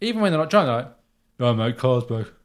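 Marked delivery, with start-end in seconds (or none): 1.4-2.3 dim, vacant, brain-dead bar guy voice. Mocking the most cretinous guys at a bar, imitating a cretinous bar guy. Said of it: "The most cretinous guys at a bar".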